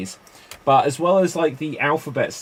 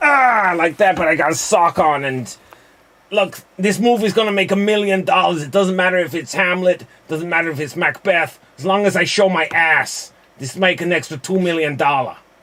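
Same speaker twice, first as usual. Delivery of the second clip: fake Cuban accent, higher and louder; 5 semitones higher, 4 dB louder than usual. Performing an improv character scene in a put-on Cuban-sounding accent. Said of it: "I sound like I'm trying to be Cuban".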